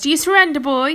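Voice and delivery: hoarse and loud. Pellinore, having knocked young King Arthur to his knees, demands surrender, hoarse. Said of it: "he asked hoarsely".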